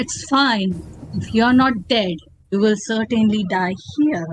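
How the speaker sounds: acted menacing laughter through speech. Voicing the demonic creature, who looks at a player and laughs: laughing menacingly in character. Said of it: "she looks at you and she laughs".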